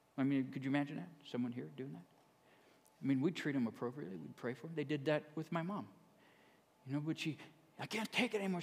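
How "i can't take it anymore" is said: put-on yelling, pitched higher. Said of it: "she was yelling this out in the crowd".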